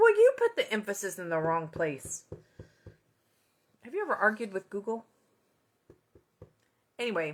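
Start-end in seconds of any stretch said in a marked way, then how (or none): none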